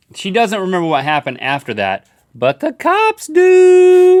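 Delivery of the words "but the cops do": very high, loud, swooping, drawn-out sing-song voice. A narrator counting down strange news stories, in a high voice. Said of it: "(high voice)".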